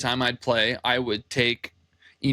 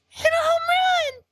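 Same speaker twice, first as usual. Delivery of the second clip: put-on very high, squeaky little boy's yell; 3 dB louder than usual. Retelling yelling to a batter at a game: high-pitched little boy voice. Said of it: "with my high pitched little boy voice".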